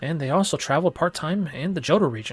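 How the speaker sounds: ordinary delivery, nothing marked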